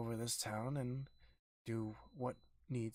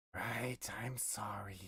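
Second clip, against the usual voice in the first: hoarse, raspy put-on voice; 3 semitones lower than usual. Made to apologize to a guest in a comedy bit, answering in a raspy put-on voice. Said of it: "why do you sound so raspy?".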